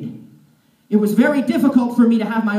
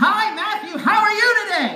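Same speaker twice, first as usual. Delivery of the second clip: very high, slow, top-of-the-lungs shout; 11 semitones higher than usual. Retelling how people would greet the speaker: imitating someone shouting. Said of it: "at the top of their lungs".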